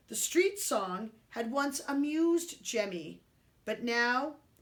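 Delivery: ordinary delivery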